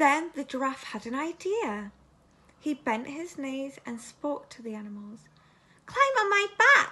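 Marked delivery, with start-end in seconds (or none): 5.9-6.9 very high, loud, squeaky little voice. The giraffe bends his knees and calls to the animals, squeaking in a high voice. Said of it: "he squeaked in his high voice".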